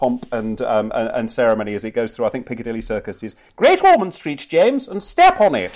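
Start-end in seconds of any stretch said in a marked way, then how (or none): 3.6-5.8 very high, plummy, posh royal voice, swooping. Voicing a speech bubble from the royal carriage: young Queen impression. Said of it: "I was going for the young Queen now".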